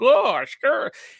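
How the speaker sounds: put-on goofy caricature hillbilly voice, thick accent, very high. Imitating a movie character described as having a thick hillbilly accent. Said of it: "the dude with the super thick hillbilly accent".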